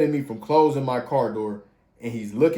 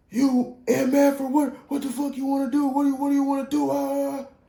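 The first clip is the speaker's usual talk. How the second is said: mock very high, fast, belligerent yelling; 13 semitones higher than usual. Retelling a crash, the speaker acts out the man who hit the car: imitating a belligerent screaming man. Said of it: "He's belligerent".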